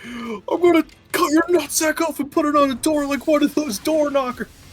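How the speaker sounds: full-blast, very loud, high-pitched, shrill screaming. Retelling a swearing line from a movie, imitating someone yelling. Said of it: "He's yelling".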